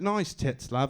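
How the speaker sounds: put-on male speaker with English British accent. Acting out what British guys can just walk up and say, British accent. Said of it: "British guys have it easy. They can just walk up and be like".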